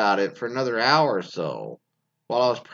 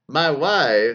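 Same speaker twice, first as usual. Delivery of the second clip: raised voice, wife drawn out; 2 semitones higher, 5 dB louder than usual. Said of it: "he'll go around and tell people".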